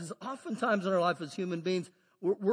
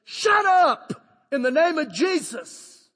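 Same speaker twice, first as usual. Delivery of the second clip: very loud, high, authoritative full-lung yell; 8 semitones higher, 10 dB louder than usual. Retelling telling a demon to shut up, shouting at the top of the lungs. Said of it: "at the top of my lungs".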